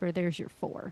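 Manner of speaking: hushed whispered voice. Player's character at the spot where Barclay was pulled overboard, whispering. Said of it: "I'm just gonna whisper".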